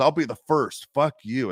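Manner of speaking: put-on hostile, in-your-face screaming. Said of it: "And he'll just screaming at me".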